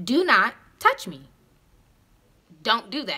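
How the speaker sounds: mock stern, very firm, means-every-word tone. Speaker re-enacts what they told a man, retelling a very stern tone. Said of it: "with a very stern tone".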